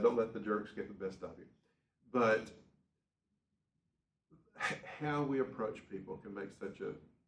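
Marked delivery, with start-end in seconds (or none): none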